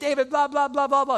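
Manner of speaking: high, loud, jeering, mouthing-off yell. Retelling Shimei popping off at David again: imitating Shimei yelling. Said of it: "He hears Shimei popping off again".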